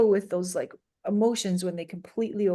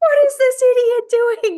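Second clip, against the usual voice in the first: shrill, very loud, high-pitched yelling; 11 dB louder than usual. Retelling yelling at another driver in the car: imitating own yelling. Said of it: "but I'm yelling it in my car".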